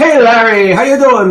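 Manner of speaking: put-on spoken in an Irish accent. Recalling an actor's Ghostbusters role, quoting the Archbishop's line in an Irish accent. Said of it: "with the with the Irish accent there".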